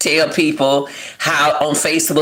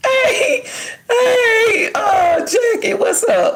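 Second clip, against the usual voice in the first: talking through laughter, higher pitch. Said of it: "I'm laughing".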